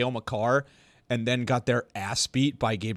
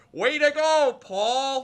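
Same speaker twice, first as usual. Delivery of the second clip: put-on heavy Minnesota accent, very high, very slow, yelled; 14 semitones higher than usual. Retelling a youth hockey video where someone yells: heavy Minnesota accent yell. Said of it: "with a heavy Minnesota accent yells".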